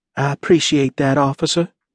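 small, tiny little voice. She answers the officer, in a small voice. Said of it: "Annabelle said in a small voice".

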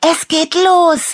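calling out in a very high voice. After a deafening bang outside, Annabella calls to Leo, calling out. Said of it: "rief Annabella".

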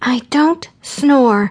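high hiss through clenched teeth, voice kept down. After another camper complains about the noise, she answers him, hissing through clenched teeth. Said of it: "hissing at him through clenched teeth to keep her voice down".

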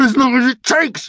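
shrill, very high snap through clenched teeth. A man answers another who asks how much longer he'll be, snapping through gritted teeth. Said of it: "snapped Norm through gritted teeth".

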